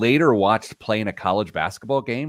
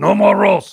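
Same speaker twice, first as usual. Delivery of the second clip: very high, very loud, shrill cartoon monster voice; 11 semitones higher, 9 dB louder than usual. Retelling what he said after blocking the roll, in Cookie Monster voice. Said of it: "with his Cookie Monster voice".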